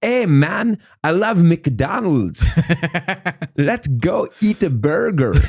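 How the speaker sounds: vague put-on Eastern European accent. Riffing on a vague eastern european guy trying to be american, vague eastern european accent. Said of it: "a vague Eastern European guy trying to be American".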